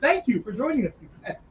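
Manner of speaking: earnest, deeply sincere, heartfelt delivery. Redoing a thank-you for joining, making it sound more sincere. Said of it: "I should make that sound more sincere".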